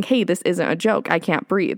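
ordinary talk

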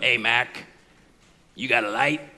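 very low, gruff-sounding voice. Retelling a radio sketch where a stranger asks for a light: gruff-sounding voice. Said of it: "this gruff-sounding person go".

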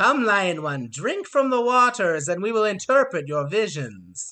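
loud harpy voice. Voicing a harpy who invites a player to drink: harpy voice. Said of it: "this center harpy kind of flies a little bit over to Eunuch and says".

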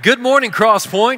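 loud, high call-out.

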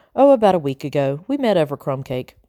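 plain reading voice

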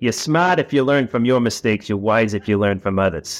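strong Boston accent. Podcast host quoting a favorite saying to a guest, boston accent. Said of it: "this will be my Boston accent come out".

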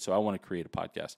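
ordinary talk

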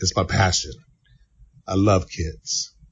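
tearful, choked-up voice. Answering a question about telling kids he loves them: tearing up. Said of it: "I'm tearing up".

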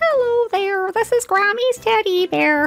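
very high, squeaky, silly make-believe teddy voice. You show how you keep them engaged on the screen with a toy, in a silly teddy bear voice. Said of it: "Sometimes I have to do some silly voices".

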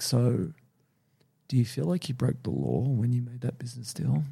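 put-on soft, easygoing, very casual Canadian accent. Describing a man's subtle questioning, imitating him: weird soft casual canadian accent. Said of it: "talking like real casual and soft and using his kind of weird Canadian accent".

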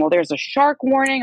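acted, heated, raging, high-pitched angry yell. Retelling a beach argument with him, imitating him screaming. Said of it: "And he starts screaming".

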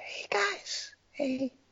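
very quiet, breathy, hushed whisper, barely voiced. Feeling self-conscious, showing how they'll talk from now on, whispering. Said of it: "I'm like whispering".

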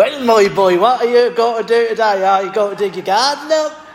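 Norfolk dialect accent. Asked for his very best Norfolk dialect, [name] answers in a Norfolk accent. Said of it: "say something in your very best Norfolk dialect".

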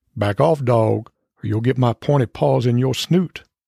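southern sheriff voice. Retelling a standoff between a dog and a cat, voicing the cat in a southern sheriff voice. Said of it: "the cat sounds like a southern sheriff".

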